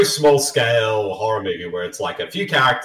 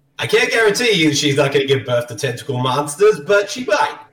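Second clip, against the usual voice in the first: put-on New York street-style accent; 4 semitones higher than usual. Playing a character in a scene set in canada, new york accent. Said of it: "I'm using a New York accent".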